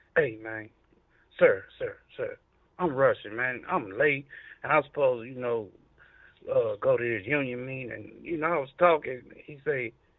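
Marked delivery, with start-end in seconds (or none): 0.2-7.9 respectful, proper, formal polite talking voice. Retelling talking to an officer who stopped him: imitating own proper talking voice. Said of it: "the voice and everything".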